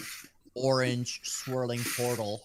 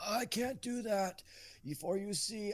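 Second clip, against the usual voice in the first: put-on old man voice, higher, quieter; 10 semitones higher, 7 dB quieter than usual. Refusing the group's request for a reward, in a generic old man voice. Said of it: "I'm going to give him generic old man voice".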